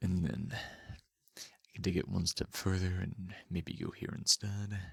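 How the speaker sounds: very low, deep voice, bottom of the range. Demonstrating their lower range, the speaker drops into a very low voice. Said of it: "just how low I can go".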